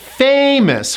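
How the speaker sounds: famous with stress on first syllable FA. Teaching English pronunciation, modelling the word, stress on FA in famous. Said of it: "First syllable gets the stress".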